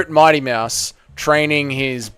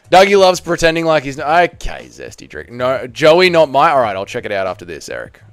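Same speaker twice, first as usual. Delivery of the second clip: ordinary delivery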